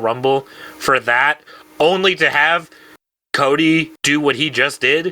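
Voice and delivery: ordinary talk, nothing marked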